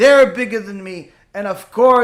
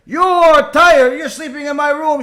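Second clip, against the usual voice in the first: high, loud, bloodcurdling screaming; 6 semitones higher, 6 dB louder than usual. Retelling how a woman screamed at a grandson: imitating a woman screaming. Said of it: "She starts screaming".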